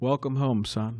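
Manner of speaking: flat, dreary, depressing droning monotone. Retelling a father handing his son the keys, imitating a monotone, depressing voice. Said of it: "in his very kind of monotone, depressing uh, voice".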